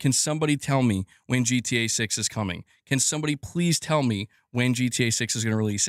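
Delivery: plain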